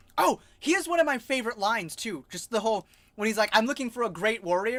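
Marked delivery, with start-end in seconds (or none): none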